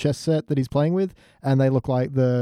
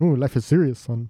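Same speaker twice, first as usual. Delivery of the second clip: put-on classic old-movie horror vampire count voice. Quoting a line from the episode, unintentionally sounding like Dracula. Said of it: "I sound a little too much like Dracula there".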